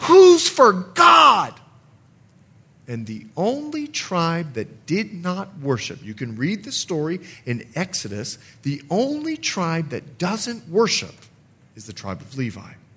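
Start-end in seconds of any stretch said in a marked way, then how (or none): 0.0-1.5 very loud, booming, very high-pitched shout. Retelling how Moses, angry at the golden calf, shouts: retelling Moses shouting. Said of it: "he shouts out".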